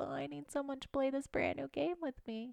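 put-on very soft, small, pitiful, sad voice. Imitating a partner asking someone to play a new game: imitating someone sounding sad. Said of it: "Is that what I was like? So sad?".

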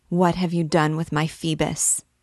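ordinary delivery

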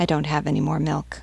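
plain

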